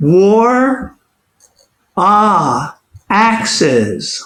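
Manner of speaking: high, drawn-out turkey voice, "war" stretched long. Performing a two-voice Thanksgiving piece, speaking the turkey's line in a higher turkey voice. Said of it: "The higher voice is that of the turkey".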